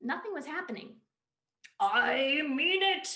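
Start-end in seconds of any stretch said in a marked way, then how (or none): 1.8-3.2 very loud, huge, booming, menacing heavenly angel voice. A narrator reads a man's line in the woods, in a big, scary angel voice. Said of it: "he said in a big, scary angel voice".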